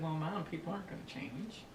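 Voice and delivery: ordinary talk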